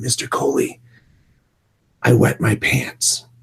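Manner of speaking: slow, hushed, secretive whisper, close up. Retelling what a young student whispered to the speaker: imitating a girl whispering. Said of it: "she whispered".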